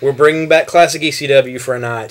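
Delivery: ordinary talk, nothing marked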